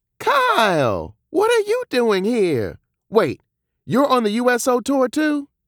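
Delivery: very high, playful, teasing, swooping excitement. Giving the narrator a hard time as she greets him: teasingly excited. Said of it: "she asked excitedly".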